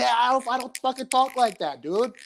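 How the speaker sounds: very high, dumb, silly, squeaky put-on voice. Imagining a comedian's angry reply to the impression: imitating Bill Burr. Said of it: "Bill's gonna be like".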